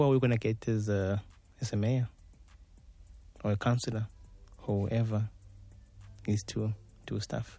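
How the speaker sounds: voice falling away. Speaker poses a question after a thought, voice dropping. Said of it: "your voice just dropped after that".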